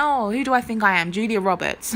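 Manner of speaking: ordinary delivery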